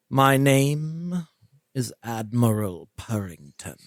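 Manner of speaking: cat voice, stretching the name out long. Voicing a cat that tilts its head at a player: Admiral Purrington cat voice. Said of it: "and it says".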